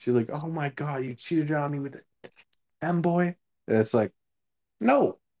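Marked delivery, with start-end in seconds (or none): 0.3-3.4 acted, agitated, accusing yelling in girl voice. Retelling a phone call in which a girl starts yelling at him: retelling her yelling. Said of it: "starts yelling at me".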